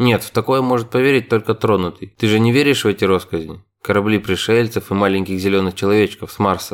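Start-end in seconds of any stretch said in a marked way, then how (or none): none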